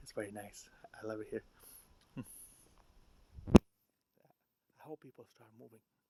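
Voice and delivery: speaking in a hushed whisper. Talking to the camera, whispering. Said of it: "I'm whispering because".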